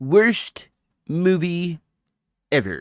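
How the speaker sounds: shrill, loud, proclaiming delivery. Getting in character, the speaker does a Comic Book Guy voice. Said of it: "let me get in character".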